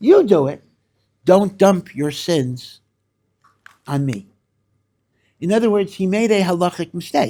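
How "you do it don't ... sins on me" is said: raised, almost sarcastic retort tossed straight back. Acting out a refusal to marry, telling the other to do it: imitating a sarcastic retort. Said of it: "meaning almost sarcastically".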